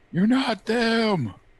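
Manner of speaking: very high, shrill, weeping, tearful rage scream. Narrating Fenris hacking into a creature with his axe, Fenris screaming through tears. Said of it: "just screaming, his tears come pouring".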